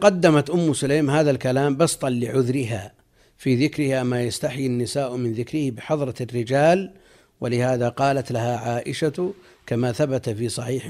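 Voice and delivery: ordinary talk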